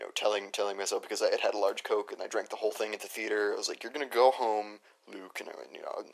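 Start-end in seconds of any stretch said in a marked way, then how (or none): none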